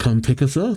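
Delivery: ordinary delivery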